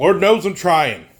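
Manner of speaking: loud, high-pitched yell. Talking about trying to get their steps in, yelling. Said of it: "Sorry for yelling".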